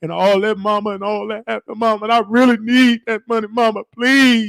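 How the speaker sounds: high, weepy, tearful put-on crying voice. Retelling how the uncle begged his mother for money: imitating a crying plea. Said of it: "He would cry".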